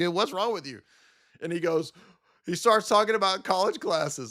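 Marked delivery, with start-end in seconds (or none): 0.0-0.8 acted chuckling, laughing through the words. Retelling own reply to a man in a debate: laughing while talking. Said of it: "I just started laughing at him".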